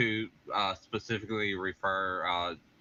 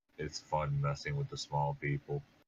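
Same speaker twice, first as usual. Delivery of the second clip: low, sidelong muttered aside; 5 semitones lower, 4 dB quieter than usual. A player voicing Zod, leaning over to Tashdar while walking, muttering as Zod. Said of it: "he's gonna lean over and just mutter".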